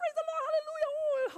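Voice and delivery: very high, overjoyed, elated voice. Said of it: "you're like".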